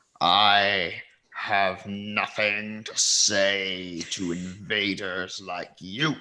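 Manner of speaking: low growling voice, drawn-out "I". Asked how long ago he awoke, the third-eye friend answers with a low growl. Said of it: "He growls something kind of like low in his breath".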